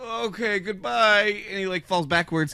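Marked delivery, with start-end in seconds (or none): 0.0-1.4 play-acted sorrowful, downcast, mournful tone. Retelling Imhotep letting go of the ledge: imitating Imhotep sadly. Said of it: "Imhotep gets so sad".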